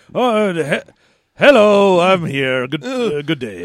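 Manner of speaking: halting, hesitant, stumbling delivery. Describing a film scene: Pierce Brosnan impression. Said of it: "Pierce Brosnan basically wanders around this movie just being like".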